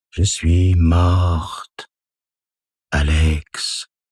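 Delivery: grave, deep, very slow ghostly voice. Reading a story, a dead aunt speaks to Alex from the mirror: deep voice. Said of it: "dit-elle d'une voix grave".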